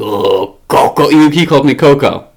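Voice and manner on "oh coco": put-on gravelly, raspy little voice. Recalling how the listener used to talk, the speaker imitates a gravelly little voice. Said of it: "you had this, like, gravelly little voice".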